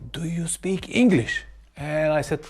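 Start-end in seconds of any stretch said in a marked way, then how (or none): 0.1-1.4 very slow, deliberate, drawn-out delivery. Retelling what a stranger asked them through a curtain, very slow. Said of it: "said very slowly".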